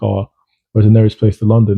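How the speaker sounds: usual speaking voice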